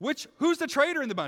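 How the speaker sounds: frustrated, upset outburst, high and loud. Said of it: "the king of Aram gets so upset. He gets so frustrated".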